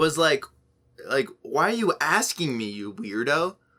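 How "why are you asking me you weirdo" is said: snarky, sarcastic delivery full of attitude. Retelling a teacher's reply to a student asking for the bathroom: imitating a sarcastic teacher. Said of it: "Sarcastic or, yeah, just some attitude".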